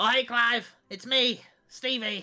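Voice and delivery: small, little rat voice. Voicing a little rat greeting Clive in a sewer: little rat voice. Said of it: "you just hear this little rat go".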